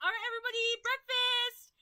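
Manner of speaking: play-acted, loud, very high calling voice. Retelling how Ash's mom woke everyone for breakfast: retelling a loud wake-up call. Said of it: "and like like loudly".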